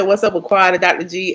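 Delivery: plain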